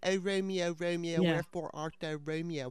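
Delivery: put-on Baltimore accent for laughs. Imagining a Baltimore remake of Romeo and Juliet, delivering Juliet's line: Baltimore accent. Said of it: "have like the Baltimore accent".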